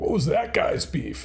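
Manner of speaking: cartoon dog character voice. Keeps doing a voice he likes so much, Poochie voice. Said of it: "that Poochie voice".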